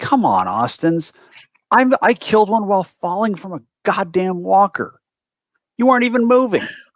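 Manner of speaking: very high, shrill yelling. In a tabletop fight, a player's character yells at Austin's: yelling at a teammate. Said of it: "to yell at him and say".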